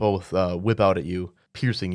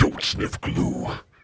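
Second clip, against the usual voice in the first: foreboding, ominous voice. Voicing a tentacled thing rising through a door, speaking in your head: ominous voice. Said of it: "you hear this ominous tone, this voice".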